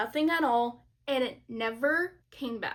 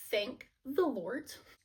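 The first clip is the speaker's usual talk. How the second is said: ordinary talk, nothing marked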